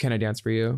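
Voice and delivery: flat, expressionless, dry deadpan delivery. Speaker acts out a line she could have said, deadpan. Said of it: "just deadpanning and being like".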